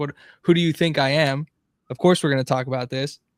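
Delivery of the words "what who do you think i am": ordinary talk, nothing marked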